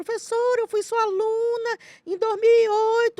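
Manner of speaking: mock very high, shrill, tearful crying shout of a girl. A teacher retells a phone call from a former student; imitating a girl crying and yelling. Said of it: "atendi uma menina gritando, chorando".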